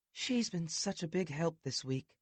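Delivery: mild, gentle tone. Ivy speaks to the narrator in a soft voice. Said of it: "Ivy says in a soft voice".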